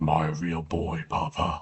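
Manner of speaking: very deep, slow, drawn-out, eerie, unsettling voice. Speaker drawing in the style of Meat Canyon voices Pinocchio, deep, unsettling Pinocchio voice. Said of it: "Just a very deep, unsettling voice".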